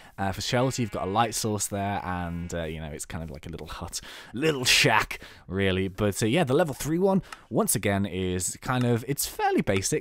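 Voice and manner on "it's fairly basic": voice suddenly jumping very high. Describing a fairly basic house in the game: voice going really high. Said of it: "my voice went really high then".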